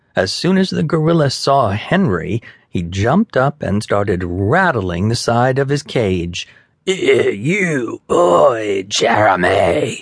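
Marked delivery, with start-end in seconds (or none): 6.8-10.0 snarling, stretching the word "you". The gorilla, rattling his cage at the boy Henry, snarled. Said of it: "he snarled".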